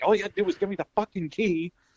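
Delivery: very high, all-out screaming. Describing a film performance where a man screams at everybody; retelling a scream. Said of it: "he just starts screaming at everybody like".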